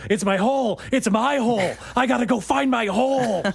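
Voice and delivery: high, frantic screaming. Picturing the man screaming through the streets about his hole: Nicolas Cage screaming impression. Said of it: "Nicolas Cage ... running and screaming ... screams about his hole".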